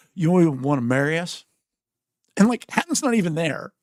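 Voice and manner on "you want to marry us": put-on speech with mouth full, higher, louder. Retelling how she asked to be married by you: imitating Mia talking with mouth full. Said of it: "with a mouthful of pizza".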